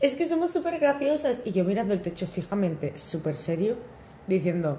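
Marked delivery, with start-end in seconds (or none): 0.0-1.4 mock cracking up, high, laughing hard. Retelling listening to their own podcast in bed: imitating Ángela laughing hard.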